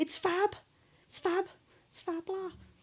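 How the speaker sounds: put-on stretched-out high Scouse accent. Imitating how older Scousers say a phrase, mimicking a Liverpool accent. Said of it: "older Scousers say".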